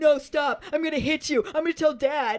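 mock high, frantic, freaked-out protesting tone. Retelling a scene where Dudley freaks out: imitating Dudley freaking out. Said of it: "Dudley is just freaking the fuck out".

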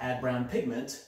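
ordinary talk

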